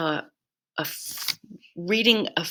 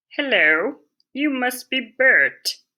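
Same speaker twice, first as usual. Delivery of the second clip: put-on high, loud, big children's TV character voice; 6 semitones higher, 5 dB louder than usual. Reading a story aloud, a boy greets someone: Sesame Street voice. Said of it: "he said in his best Sesame Street voice".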